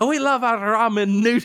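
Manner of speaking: mixed Scottish and Irish accent. Joking about an invented mixed accent: made-up Scottish-Irish accent. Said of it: "that's not a real accent".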